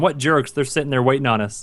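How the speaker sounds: ordinary talk, nothing marked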